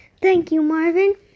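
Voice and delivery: ordinary delivery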